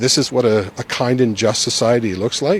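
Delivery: ordinary delivery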